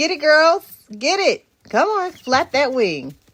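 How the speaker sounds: loud, high, sing-song, excited cheering. Cheering on the new chicks, raised excited voice. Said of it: "whenever I raise my voice like that".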